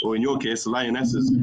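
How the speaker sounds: plain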